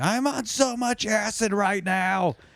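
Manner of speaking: very high-pitched screaming. Recalling screaming in a girlfriend's class of 200, retelling own screaming. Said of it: "I just started screaming".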